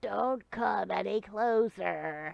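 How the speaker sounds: bad, terrible put-on goblin growl. Voicing a character waving a glaive at a player, in a terrible goblin voice. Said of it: "That's probably a terrible goblin voice".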